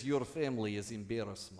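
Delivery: bad, exaggerated put-on Russian accent, robotic computer voice. A computer speaks to you about your family, in a bad russian accent. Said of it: "in a bad Russian accent".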